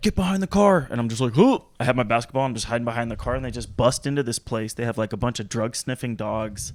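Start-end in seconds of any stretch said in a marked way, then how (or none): 0.0-0.9 very high, barking cop-style yell. Telling about armed cops arriving while shooting hoops, imitating cops yelling. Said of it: "They're like yelling at me".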